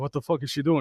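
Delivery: ordinary talk, nothing marked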